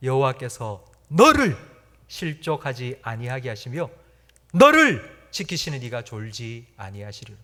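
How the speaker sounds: verse read with heavy stress on each 너. Reading a Bible verse aloud, with emphasis on 너. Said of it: "우리가 강조해서 읽어야 될 단어가 있습니다. 그게 무언고 하니 너입니다".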